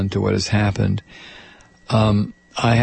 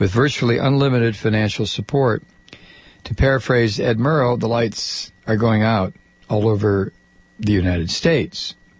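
ordinary talk, nothing marked

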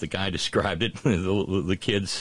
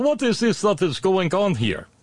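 terrible, high-pitched, put-on Russian accent laid on; 12 semitones higher, 4 dB louder than usual. Telling a joke, voicing the husband Dmitry in a horrible Russian accent. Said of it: "a horrible Russian accent too".

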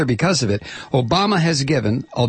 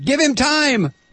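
high, slow mock screech and yell. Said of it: "screech and yell".

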